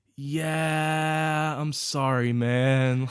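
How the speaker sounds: mock depressed tone. Retelling a phone agent's reply: imitating a very depressed man. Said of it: "most depressed person I've ever heard".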